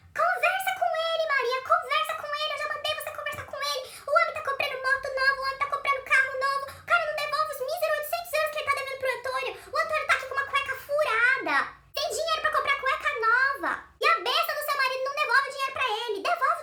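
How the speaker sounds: put-on angry woman's rant. Retelling a woman on the metro berating her sister: imitating a woman cursing angrily. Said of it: "Ela começou a xingar o marido da Maria".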